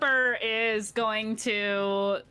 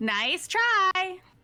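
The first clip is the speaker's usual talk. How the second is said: put-on very high voice, like a small child; 10 semitones higher than usual. Reading out what Clipper says, in a child voice. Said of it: "In a child voice".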